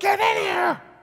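mock, very high shouted yell. Retelling how a lady in labor called through the door: imitating a lady yelling. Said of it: "she yells".

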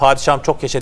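normal talking voice

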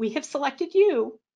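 tearful, choked-up voice. Announcing to someone that they have been selected, about to cry. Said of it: "and I'm going to cry. Sorry about that".

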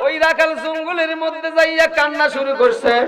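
tearful, high preacher-style wail.

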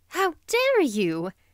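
prettily exclaimed, high voice. A woman taps a man's fingers with her parasol: exclaiming prettily. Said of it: "she exclaimed prettily".

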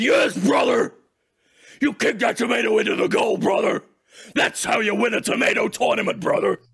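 loud, pumped-up, blustering yelling. Cheering a goal kicked with a tomato: Hulk Hogan yelling. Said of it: "Hulk Hogan is yelling".

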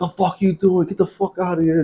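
high-pitched, mild mock yell in cop voice. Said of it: "like, yelling at my father".

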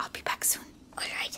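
soft, voiceless whisper. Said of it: "Why are you whispering?".

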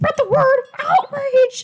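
tiny, very high-pitched cartoon mouse voice. Playing a Mario game and voicing a Toad, in a Mickey Mouse-like Toad voice. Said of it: "My toad voices kind of sound like Mickey Mouse".

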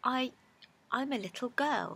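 uncertain, hesitant delivery. Alice answers the pigeon's question about what she is, rather doubtfully. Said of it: "rather doubtfully".

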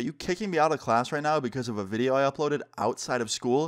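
ordinary delivery

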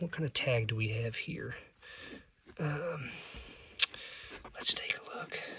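thrilled, secretive, very hushed excited whisper. Going through a tub of beaded pouches, checking a tag: excited whisper. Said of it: "I don't know why I'm whispering".

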